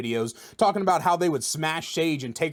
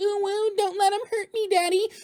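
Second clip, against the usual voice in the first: squeaky, very high put-on kitten voice. Mocking a player in a video game: fake kitten voice. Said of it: "fake ass ... kitten voice".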